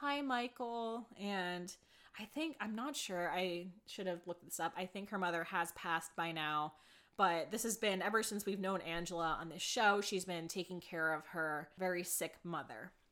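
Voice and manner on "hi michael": hushed, very quiet, soft, barely-there voice. Retelling how a mother in a hospital bed greets someone: imitating a very quiet greeting. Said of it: "very quietly says".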